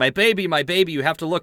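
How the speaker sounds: frantic, pleading screaming in a woman's voice. Retelling a comic story, a woman runs into a hospital: imitating a woman screaming. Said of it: "a woman who runs into a hospital and is screaming".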